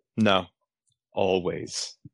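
low, grave, solemn, somber tone. Repeating a quoted line in the tone in which it's said, mock-somber tone. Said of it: "I'll try to do it in the tone in which it's said".

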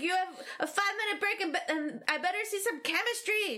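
play-acted, high, barking megaphone-style yelling. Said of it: "yelling at people".

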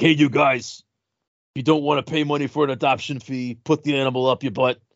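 deliberately bad, rough-edged, gruff taxi driver voice. Recalling one of their small repertoire of bad voices: gruff taxi driver voice. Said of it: "the gruff taxi driver voice".

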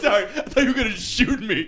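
high-pitched, laughing, mocking delivery.

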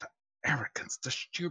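muttering under breath. Voicing a character pacing while reading a letter: muttering under his breath. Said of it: "he's muttering under his breath".

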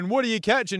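mock high, mild, held-in scream-like yell. Retelling what someone pulled up next to them was screaming: imitating someone screaming. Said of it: "he's sitting there screaming".

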